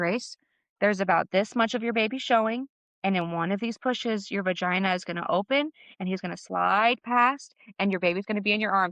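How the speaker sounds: plain, explaining voice. Retelling what a helper said during the birth: imitating Naomi speaking quietly. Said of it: "she speaks really quietly".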